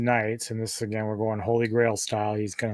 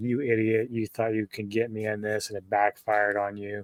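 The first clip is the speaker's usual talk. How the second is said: gloating, taunting words through giggles and laughter; 4 dB quieter than usual. Retelling a film scene where a character taunts someone: imitating giggling while talking. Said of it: "she's kinda giggling and laughing like".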